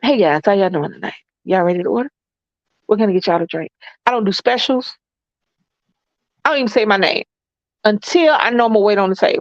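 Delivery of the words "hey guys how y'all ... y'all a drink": put-on, plain, unfussy, blunt, no-frills delivery. Retelling greeting a table while waiting tables: imitating a not-fluffy server greeting. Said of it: "the not fluffy experience of Lisa".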